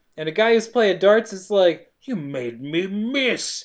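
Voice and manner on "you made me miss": menacing, hushed, slow and deliberate. Retelling how a darts player reacted, in a mock-threatening voice. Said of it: "in a threatening voice".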